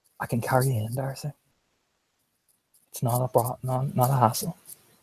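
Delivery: tender, close-up, soft, gentle murmur. Voicing a character who offers to carry Darcy: speaking very gently in her ear. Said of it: "he says very gently in her ear".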